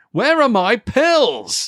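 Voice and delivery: very high, shrill, loud, drawn-out shout. Retelling a film scene where a man calls into the room: imitating a man shouting. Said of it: "he just shouts out randomly into the room".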